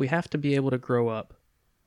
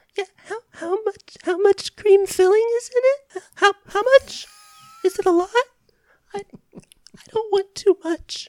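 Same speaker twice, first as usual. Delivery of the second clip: very high-pitched, very loud character voice; 10 dB louder than usual. Ordering an eclair at Dunkin' Donuts in character as Avery LeClaire. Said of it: "your best impression of Michelle Williams's Avery LaFou".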